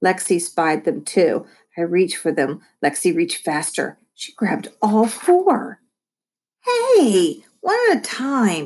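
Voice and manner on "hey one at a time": drawn-out, high, sing-song complaining, "hey" stretched long. A little brother protests when his sister grabs all the taco shells, complaining. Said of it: "I complained".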